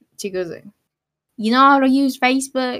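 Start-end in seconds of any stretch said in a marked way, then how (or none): 1.4-2.8 put-on casual Southern American accent. Retelling what a woman asked the speaker, in a southern accent. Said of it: "She actually has a Southern accent this time".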